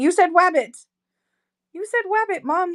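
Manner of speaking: high, eager, excited little dog voice. A mom voices her dog's reply to her, voicing Romeo the dog. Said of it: "He's like".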